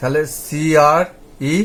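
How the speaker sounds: very slow, careful spelling, letters blended. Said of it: "teacher spelling out blends".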